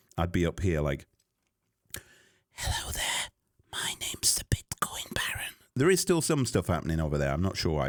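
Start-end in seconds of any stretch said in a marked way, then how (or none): 2.6-5.6 soft, breathy, hushed whisper. Showing how a whisper shows up on a sound graph: whisper. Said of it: "if I was to whisper".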